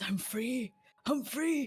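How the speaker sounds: dramatic, savoring, high, drawn-out proclamation. Acting out a character ripping off his shirt after a shift: saying it quietly. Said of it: "and quietly says".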